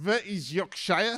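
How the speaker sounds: put-on French-accented English. Quoting the French at a meeting, in an imitated French accent. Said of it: "as they do in French accents".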